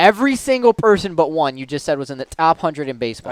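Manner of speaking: ordinary talk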